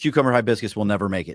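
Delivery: acted, fast, aggressive, hard-line declaration. Retelling how a guy answered a woman's question, retelling an aggressive statement. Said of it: "the most aggressive way I've ever heard".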